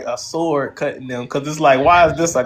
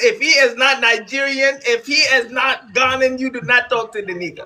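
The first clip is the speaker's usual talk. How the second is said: mimicked voice, higher; 9 semitones higher than usual. Showing how African parents warn their children: imitating African parents. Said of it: "They say it like this".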